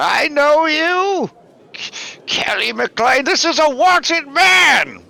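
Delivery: frantic, hysterical, very high-pitched, loud outburst. A game master voices the man on the ground staring up at the player, very hysterical. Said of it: "he's very hysterical".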